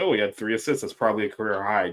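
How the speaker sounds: dry, sarcastic, backhanded delivery. Retelling the coach's answer about a player: imitating a sarcastic coach. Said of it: "he kinda sarcastically said".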